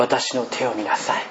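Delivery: warm, affectionate voice.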